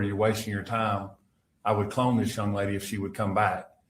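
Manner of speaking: usual speaking voice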